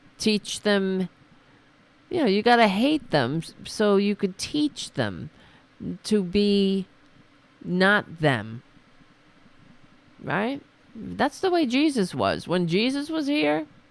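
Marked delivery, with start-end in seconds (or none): none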